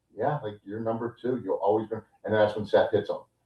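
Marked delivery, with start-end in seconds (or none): 0.2-2.0 mock calm and cool tone, quieter. Retell how one wrestler just sat there and answered another, imitating someone calm and cool. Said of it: "Roman just sat there so calm and cool".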